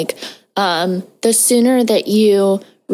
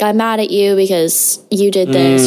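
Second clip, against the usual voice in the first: plain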